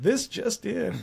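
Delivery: soft newsreader voice, urgent bulletin-style delivery. A speaker mimics how his old lady talks like an announcer: news announcer voice. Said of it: "Talks like an announcer".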